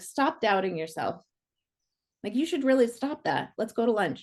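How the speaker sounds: offhand, breezy, nonchalant, shrugging delivery. Retelling a friend's offhand remark after a class demo: imitating Deborah's nonchalant tone. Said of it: "so nonchalant".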